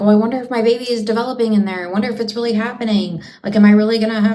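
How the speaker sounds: anxious, panicky, fretting, worried tone. Acting out a pregnant woman doubting her baby is developing: mock panicking. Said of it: "she's not panicking".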